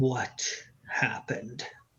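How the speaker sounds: hushed, breathy whisper. Voicing a character who looks at her daughter: whispering.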